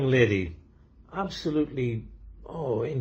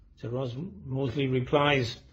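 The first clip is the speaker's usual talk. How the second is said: usual speaking voice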